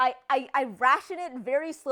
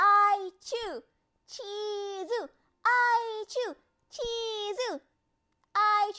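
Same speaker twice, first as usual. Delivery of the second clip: mock high, whining, wheedling, pleading tone; 8 semitones higher than usual. Retelling how she asks for cheese and ice cream, imitating her whiny voice. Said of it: "when she's being very whiny".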